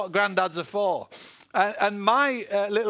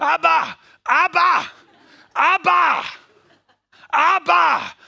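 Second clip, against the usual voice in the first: put-on slow, high little child voice, very drawn out; 9 semitones higher, 9 dB louder than usual. Retelling a little girl calling out for him while he hid: imitating a little child's voice calling. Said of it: "So I heard this little voice calling".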